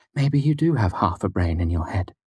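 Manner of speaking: ordinary delivery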